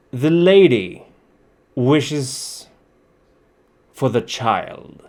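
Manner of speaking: hollow, echoing, halting voice, very slow and drawn out. Voicing an armored herald who demands the child: echoing armored voice. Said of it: "which is echoing quite a bit".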